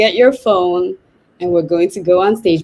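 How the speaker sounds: plain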